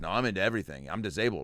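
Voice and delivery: ordinary talk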